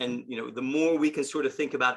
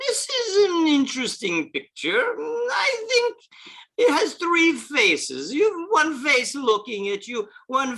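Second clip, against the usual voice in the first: put-on loud, swooping Russian accent pitched very high; 13 semitones higher, 5 dB louder than usual. Retelling what a man said about a picture, in Gennady's Russian accent. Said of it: "in his Russian accent".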